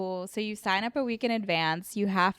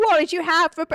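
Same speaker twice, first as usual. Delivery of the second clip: put-on British accent, high, raised, cut off midword; 8 semitones higher, 8 dB louder than usual. Retelling crowd work, imitating an audience member's accent. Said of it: "I tried to imitate him".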